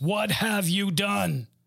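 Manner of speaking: firm, reproachful, stern fatherly voice. Speaker imagining how god asked the question: dad voice. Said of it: "I'm sure God used his dad voice".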